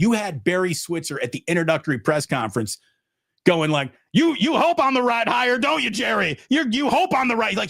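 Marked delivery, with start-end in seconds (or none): 4.1-7.5 mock, very high screaming taunt. Acting out an introductory press conference next to Jerry Jones, imitating Barry Switzer screaming. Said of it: "he's screaming next to Jerry Jones".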